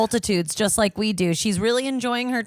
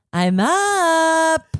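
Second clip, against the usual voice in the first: acted groan through full-body stretch, raised, drawn-out; 7 semitones higher, 6 dB louder than usual. Acting out someone waking from a nap: mock stretching while speaking. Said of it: "he took a big full body stretch and he went".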